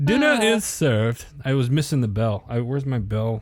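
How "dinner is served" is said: butler voice, pitched up, announcer style. Playing along after being told they sounded like a butler: butler voice. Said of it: "You sounded like a butler".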